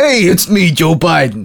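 loud, high-pitched New York accent. Joking that Joe Biden is a New Yorker now: Joe Biden as a New Yorker. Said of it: "he's a New Yorker now".

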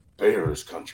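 slight rasp through the words. Imitating another speaker's line from the opener: imitating Aldo's raspy voice. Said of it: "you got that little raspiness to it".

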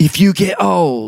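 put-on high, slow British accent. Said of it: "I don't know why he's British now".

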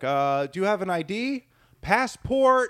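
slow, high, drawn-out yell, climbing. Retelling how a man asked a girl for her ID: imitating a man yelling. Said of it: "he's yelling at her".

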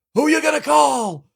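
put-on shouting. Retelling a crazy guy outside the subway: imitating someone shouting. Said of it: "he just started shouting".

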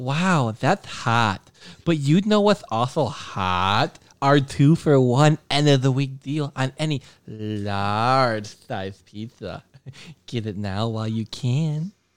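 put-on valley girl accent. Taking a turn in a voice challenge, doing a put-on valley girl voice. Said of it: "Valley girl".

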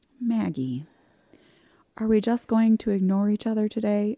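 imitated gentle speaking. Retelling what someone said at a party: imitating someone speaking very gently. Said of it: "very gently".

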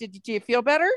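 acted passive-aggressive delivery. Acting out what they say to someone rude: acting out own passive-aggressive remark. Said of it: "I'll say a little passive aggressive stuff".

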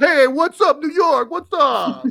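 very high, put-on New York accent. Greeting listeners in New York: put-on New York accent. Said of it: "John and the accents".

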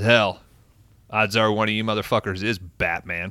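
usual speaking voice

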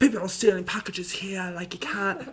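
put-on British accent. Retelling how a guy from upstairs yelled at people, imitating a british accent. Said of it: "You're just doing the accent".

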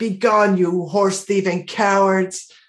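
called out in a knight-like voice. Playing a character who yells at fleeing grooms: yelling in character. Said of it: "So I yell at the fleeing grooms".

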